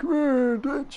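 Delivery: very high-pitched, strained, constipated-sounding voice. Doing a quick Arthur impression while playing a game: Arthur impression. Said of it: "When I try and do Arthur".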